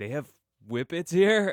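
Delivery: high, loud, surprised, amazed disbelief.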